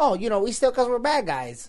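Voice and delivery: put-on New Jersey accent, bad-guy voice. Quoting a character's line from the movie, in a Harley Quinn Jersey accent. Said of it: "Why are you from Jersey suddenly?".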